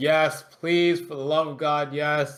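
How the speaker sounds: loud, mock, all-out scream at top volume. Retelling an eager reply to a challenge: imitating Tekla screaming. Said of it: "And Tekla is screaming".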